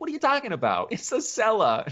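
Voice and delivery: put-on odd, sudden, very high, swooping New York accent. Describing the mom going down to the cellar, quoting her: weird New York accent. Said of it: "she develops a weird New York accent".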